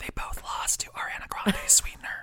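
soft, unvoiced, conspiratorial, secretive whisper.

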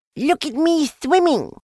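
squeaky little voice, very high-pitched. Roo calls from the middle of his pool as the others rush down: squeaking. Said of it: "squeaked Roo from the middle of his pool".

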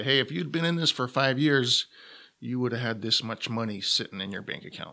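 ordinary talk

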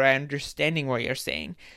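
ordinary delivery

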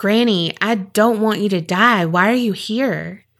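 ordinary delivery

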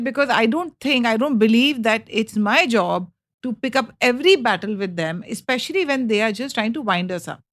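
normal talking voice

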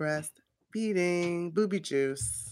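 very slow, drawn-out spelling out. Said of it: "a tad bit slow in the pickup".

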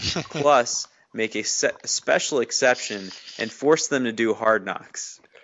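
ordinary talk, nothing marked

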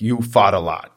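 put-on heavy New York accent on the word fart. Quoting what a man told him, in a thick New York accent. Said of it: "he's got a thick New York accent".

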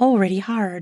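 usual speaking voice

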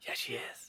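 soft, hushed, barely voiced whisper. Retelling how a movie character answers another character: imitating a whisper. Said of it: "whispers to him".

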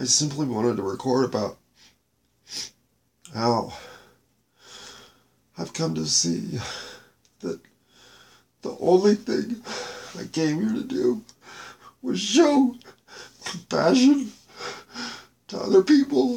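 near tears, choked-up, halting, breaking voice, words barely coming out. Explaining the wish to record about showing compassion, choking up. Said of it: "I can barely get the words out".

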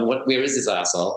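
ordinary delivery

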